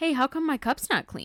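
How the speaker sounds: pointed, accusatory delivery. Retelling a husband asking about his unwashed cup: accusatory tone. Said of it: "it was very accusatory".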